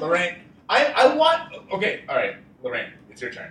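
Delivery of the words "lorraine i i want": shrill, very high-pitched screaming. Trying to give Lorraine the turn: screaming. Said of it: "Why are you screaming".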